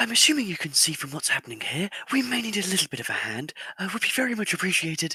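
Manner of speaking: very loud, high-pitched shouted call. During a game, his character calls out to another character; yelling out. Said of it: "I will just kind of yell out and say".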